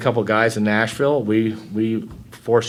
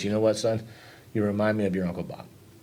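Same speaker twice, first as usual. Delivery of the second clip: soft, hushed, intimate half-whisper; 8 dB quieter than usual. Retelling what an aunt half-whispered at a funeral: imitating Aunt Betty's half-whisper. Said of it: "my Aunt Betty whispered to me".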